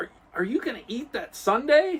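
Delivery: put-on nerdy kid voice, pitched high. Retelling a TV scene to a listener, voicing the nerdy kid: Urkel voice. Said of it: "That's your Urkel voice?".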